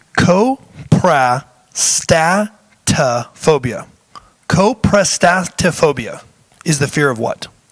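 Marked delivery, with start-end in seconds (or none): 0.2-3.9 very slow, deliberate, every syllable sounded out. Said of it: "I have to say it like that to make sure I get all of the syllables".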